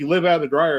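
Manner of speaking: ordinary talk, nothing marked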